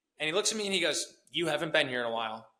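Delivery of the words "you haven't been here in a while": put-on snippy tone with attitude. Retelling what a guy at the gym said, imitating someone saying it with attitude. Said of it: "kind of with an attitude".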